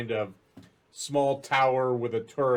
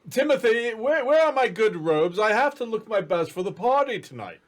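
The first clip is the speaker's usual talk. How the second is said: put-on older man's voice, pitched very high; 10 semitones higher, 4 dB louder than usual. Voicing a man calling from behind somewhere for his robes: older voice. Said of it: "an older voice say".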